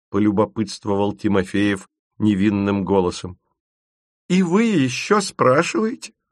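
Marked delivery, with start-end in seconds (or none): 4.3-6.1 high-pitched, crying-out exclamation. Reading a story, the narrator voices Tachion answering Timofeev, exclaiming. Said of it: "воскликнул Тахион".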